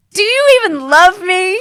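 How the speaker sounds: mock wounded disbelief, high-pitched and loud.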